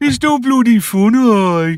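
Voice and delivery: put-on very high, loud Brummie accent. Describing a TV character, then quoting a line, Boon impression, Brummie accent. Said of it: "that was an impression from Boone".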